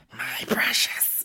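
clumsy breathy monster whisper. Retelling how a woman fussed over her engagement ring, doing a Gollum impression. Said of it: "She was like fucking Gollum".

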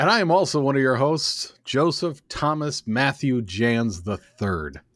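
bad radio announcer delivery. Co-host introducing himself to listeners, in lousy announcer radio voice. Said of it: "I was trying my lousy announcer radio voice".

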